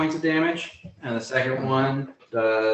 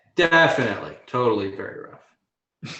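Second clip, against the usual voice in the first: heavy sarcasm, swooping sing-song; 3 semitones lower than usual. Answering a player who asks whether the enemy looks rough: sarcastic. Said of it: "that's sarcastic".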